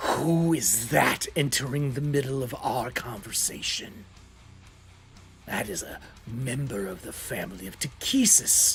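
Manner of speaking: low, soft dragon voice, hissing each word. Narrator voicing the dragon as a character enters the room, hissing dragon voice. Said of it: "it hisses immediately".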